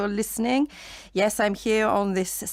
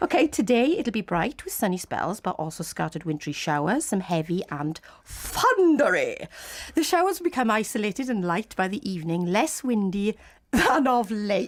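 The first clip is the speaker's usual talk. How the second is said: put-on posh upper-class accent. Presenting the weather for the first time, the speaker uses a posh voice. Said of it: "this is my posh voice".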